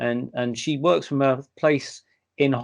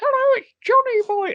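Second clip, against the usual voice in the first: put-on squeaky, very high child voice; 4 dB louder than usual. Retelling how a medium spoke as a boy spirit: imitating the medium's child voice. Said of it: "And she talks like that".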